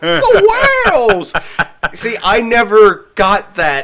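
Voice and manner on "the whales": very high pitch with the word "the" drawn out. Recalling a callback joke, quoting the same voice again: Aquaman voice. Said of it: "you hear that same voice going".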